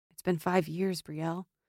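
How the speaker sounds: speaking low. After sheathing his sword, a man steps toward a woman, in a low voice. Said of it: "he said in a low voice".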